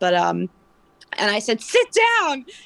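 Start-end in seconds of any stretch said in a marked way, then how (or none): 1.6-2.4 mock yell, loud and very high. Retelling yelling at a man who threw carrots, retelling a yell. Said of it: "Yelled louder than normal".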